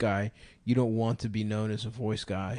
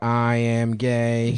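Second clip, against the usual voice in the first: robotic computer voice, louder; 8 dB louder than usual. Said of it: "he could do the robot voice".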